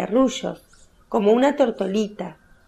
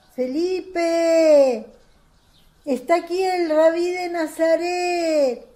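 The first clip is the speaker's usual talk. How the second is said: calling out loudly, high-pitched; 8 semitones higher than usual. A woman calls out to Felipe while Jesus stands with her: calling out louder. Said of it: "Y más fuerte dice".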